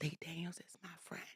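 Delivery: very quiet, very soft whisper. Speaker retells what a woman whispered to them on a show, whispering. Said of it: "she whispers to me".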